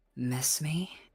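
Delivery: low voice. Voicing a charging enemy who speaks to a player: low voice. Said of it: "you'll hear her say in a low voice".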